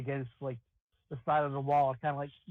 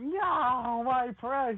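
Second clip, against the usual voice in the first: very high shrieking cry, stretched-out no; 10 semitones higher, 4 dB louder than usual. Playing a fairy whose cocaine is taken away: screaming in character. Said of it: "I scream out".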